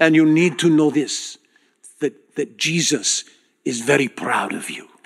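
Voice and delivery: put-on Israeli accent. Retelling what a man who led the group told them, Israeli accent. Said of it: "This is my best Israeli accent".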